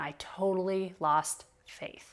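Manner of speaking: ordinary talk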